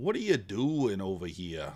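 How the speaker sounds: put-on Boston accent. A streamer addressing viewers who haven't subscribed, in a put-on Boston accent. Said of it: "That's my, uh, you know, Boston accent".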